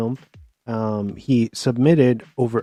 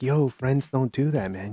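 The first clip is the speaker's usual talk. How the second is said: whisper, quieter; 2 semitones higher, 5 dB quieter than usual. Retelling what the cops in the movie say: imitating whispering cops. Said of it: "But they're whispering".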